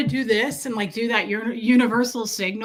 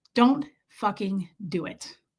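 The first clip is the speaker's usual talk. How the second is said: ordinary talk, nothing marked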